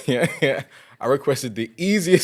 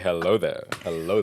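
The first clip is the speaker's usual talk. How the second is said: very low, smooth, soft late-night voice; 9 semitones lower, 8 dB quieter than usual. Tease your co-speaker about how they just said hello, imitating a late-night voice. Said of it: "got that late night voice on though?".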